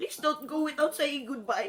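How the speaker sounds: ordinary delivery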